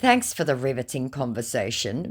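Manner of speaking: usual speaking voice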